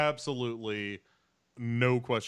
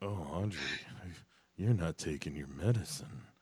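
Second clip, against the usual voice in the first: put-on creepy voice, lower and quieter; 5 semitones lower, 5 dB quieter than usual. Discussing a tv scene, acting out a character's line in a put-on creepy voice. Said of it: "That's my creepy voice".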